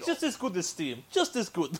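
put-on Russian accent, playing a character. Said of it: "the Russian accent".

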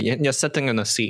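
ordinary talk

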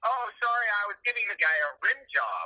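offhand, matter-of-fact, totally casual tone. Retelling what a late date answered when asked why: imitating a nonchalant tone. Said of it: "completely just nonchalant, totally casual".

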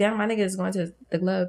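plain

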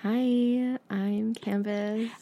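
calm, soothing yoga-instructor voice, drawn out. A host mimics Canvas introducing herself; imitating Canvas's soothing voice. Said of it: "like two yoga instructors talking".

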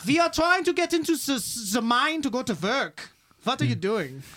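put-on Irish-or-German accent. In a role-play, workers tell a man blocking the mine to move, Irish or German accent. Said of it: "you got to do it in an Irish or German accent".

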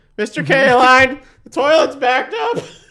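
put-on squeaky teenager voice. Describing a show, the speaker acts out the owner's employee: squeaky teen voice, Simpsons-style. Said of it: "a ripoff of the squeaky voice teen from The Simpsons".

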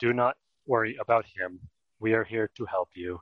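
dead flat, utterly expressionless deadpan, no feeling. Explaining how Elcor speak to other species, in Elcor deadpan voice. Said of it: "everything is a perfect deadpan".

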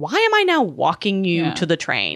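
ordinary talk, nothing marked

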